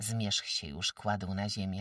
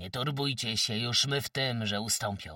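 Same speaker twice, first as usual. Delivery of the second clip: ordinary delivery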